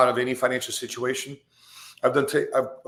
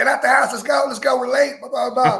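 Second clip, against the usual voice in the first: put-on very high, shrill, loud screaming; 11 semitones higher, 5 dB louder than usual. Retelling how he rushed his kids out before: imitating his own screaming. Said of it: "before I'm just screaming".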